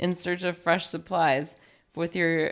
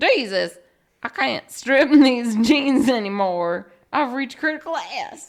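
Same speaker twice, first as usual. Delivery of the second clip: loud, high, put-on Southern accent; 7 semitones higher, 7 dB louder than usual. Giving an example sentence for a made-up word, use a fake Southern accent. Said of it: "that was my fake Southern accent".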